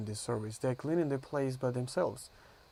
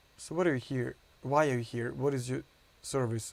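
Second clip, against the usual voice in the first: usual speaking voice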